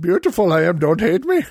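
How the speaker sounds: put-on ancient, wise old alien voice. Asked to say the line, the speaker answers in a Yoda voice.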